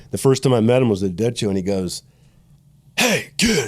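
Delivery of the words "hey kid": very high-pitched yell, as if from a distance. Retelling meeting an old man at a show: imitating an old man yelling. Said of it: "He yells across".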